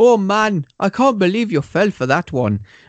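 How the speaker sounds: put-on blended Irish Jamaican accent. Speaker acts out what a character says at one point: irish jamaican accent. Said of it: "That was my Irish Jamaican".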